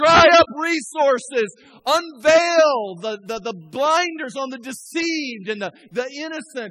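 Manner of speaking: high, loud, slow, fervent shout. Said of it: "We say".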